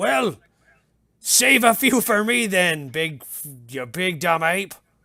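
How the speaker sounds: slow, gruff, affectionate teasing. Voicing a guard answering someone in a well: insulting guard, almost affectionate. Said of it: "He's very insulting, but ... term of endearment".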